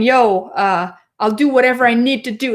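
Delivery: swaggering tough-guy mobster voice. Mocking an elected official's stay-at-home orders: Doug Ford as a mafia thug. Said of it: "like almost like a mafia mafia type thug".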